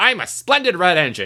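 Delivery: high, shouty storybook character voice. Trying out character voices for a story, the speaker does James, shouting. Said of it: "so he's shouts a bit more".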